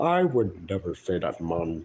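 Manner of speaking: dark, grim, put-on protesting voice. Imitating someone's reaction to a message, in a put-on character voice. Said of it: "Here's my grim impression of what his reaction to that message is".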